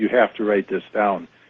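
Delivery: ordinary delivery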